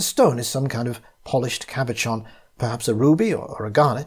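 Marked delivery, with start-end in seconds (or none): none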